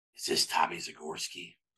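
raspy, breathy, soft voice. Retelling a phone call from a Tennessee extension, imitating Butch Jones's raspy voice. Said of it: "and it's this raspy voice".

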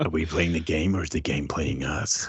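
acted snake impression. Describing a game's ending, the speaker poses its questions in a snake voice. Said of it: "That's a very good snake voice".

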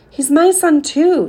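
raising her voice. A mother argues with her husband about speaking to their son, voice rising. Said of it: "her voice rising".

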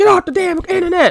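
mock yell, pitched very high. Retelling how mom yelled during internet use: imitating mom yelling. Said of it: "my mom would yell".

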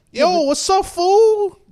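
imitated Spanish-accented child voice. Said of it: "they have that accent".

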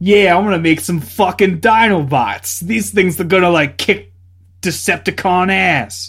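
put-on Italian-American accent. Recalling a favorite cartoon character: imitating Wheeljack's Italian-American accent. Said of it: "an Italian-American accent".

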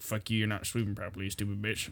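very soft, deep, low mumbled country talk. Asked how a man sounded, the speaker imitates him: imitating a mumbling country voice. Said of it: "deep in country and sounded like this".

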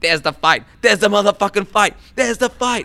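very high, loud, ranting put-on voice.

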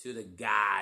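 loud Boston accent, heard on the word "garden".

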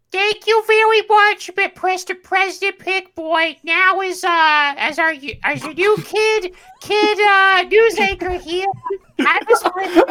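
put-on voice, pitch cranked very high, loud. Playing a news anchor thanking the president: Betty Boop voice. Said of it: "Betty Boop one of his announcers?".

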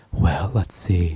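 ASMR voice, dropped down low. Answering a question about their greatest strength: ASMR voice. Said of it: "that's my ASMR voice".

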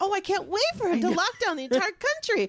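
very high, rushed, gushing, acted sarcastic excitement. Mocking imagined friends cheering the new president: imitating sarcastic fake excitement. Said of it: "None of them are saying".

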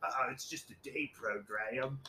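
fake British accent, slow and drawn out. Voicing own daily thought about the program: put-on british accent. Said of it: "why do you automatically go to a British accent?".

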